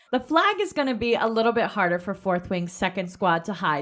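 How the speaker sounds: usual speaking voice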